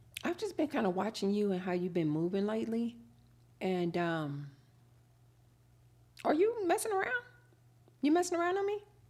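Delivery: even, controlled voice. In a skit, asking a partner whether they're messing around, not raising voice. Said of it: "I'm not raising my voice with you".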